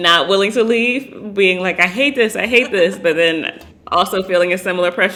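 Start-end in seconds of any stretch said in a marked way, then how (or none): 1.8-3.0 mock distressed, upset, fretful tone. Imagining how Aiden would react if trapped watching: imitating Aiden loudly upset. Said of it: "loudly upset".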